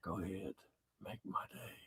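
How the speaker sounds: very quiet whispered delivery, barely audible. Running through impressions with another speaker, the speaker does Clint Eastwood impression. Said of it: "do first do Clint Eastwood".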